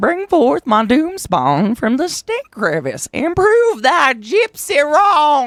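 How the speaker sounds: put-on very high, very loud, very slow, booming old-timey voice. Reading out a quote that comes with a stage direction, funny old-timey voice. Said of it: "In a funny old-timey voice".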